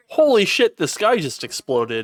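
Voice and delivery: high, swooping, frantic, panicked yell. Role-play player, with a police car coming toward them, yelling. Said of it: "I'm gonna yell".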